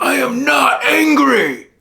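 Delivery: high, loud, furious scream.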